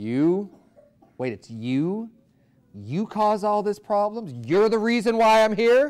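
slow, high, mock scornful, contemptuous disbelief. Acting out people in hell squinting at the devil: acting out contemptuous disbelief. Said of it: "And they have contempt".

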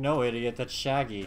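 ordinary delivery

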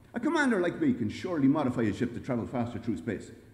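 ordinary delivery

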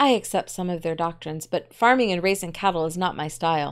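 plain

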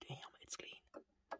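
soft, breathy, barely audible whisper. Examining a new camera's body for viewers, whispering. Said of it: "I don't know why I'm whispering".

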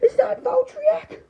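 high, tearful crying wail. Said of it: "don't cry".

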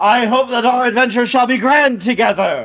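booming, resounding voice. Playing a voice greeting the cart drivers before an adventure, in a great booming voice. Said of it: "As a great booming voice sounds".

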